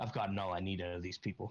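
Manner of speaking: low, impassive, unmoved stoic voice. Role-playing, a character turns back to the elf and answers: really stoic voice. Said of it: "in a really stoic voice".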